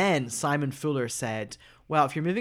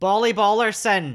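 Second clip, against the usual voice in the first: put-on Scottish accent; 7 semitones higher, 8 dB louder than usual. Saying a name the speaker can't even say, in a Scottish accent. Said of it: "Should I do it in my Scottish accent?".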